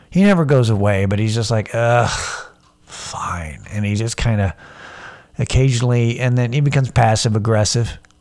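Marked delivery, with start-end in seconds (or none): 1.7-3.6 put-on low, worn-out, tired, resigned voice. Voicing the inner urge to drink as it gives in: imitating a tired voice. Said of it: "he gets tired".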